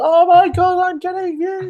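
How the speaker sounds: mock very high, drawn-out talk through laughter. Imitating another speaker who is winning inside: imitating someone laughing while talking. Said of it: "he's just laughing, going".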